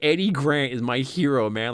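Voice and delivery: ordinary talk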